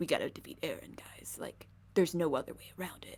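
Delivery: cool, calm, hushed whisper. Describing an anime battle scene, imitating a character's line: cool Levi voice. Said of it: "in his cool Levi voice".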